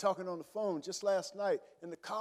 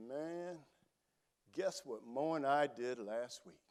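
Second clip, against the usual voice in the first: very slow, deliberate, drawn out, low; 5 semitones lower, 3 dB quieter than usual. Retelling what his best friend told him on the bed, speaking really slow. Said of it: "he started speaking real slow".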